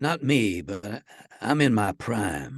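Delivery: put-on very slow, drawn-out southern American accent. Imitating a man from a great western: southern accent. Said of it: "Doesn't he have a kind of a southern accent? Isn't he like".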